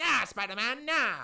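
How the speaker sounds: high, loud, sneering put-on goblin voice.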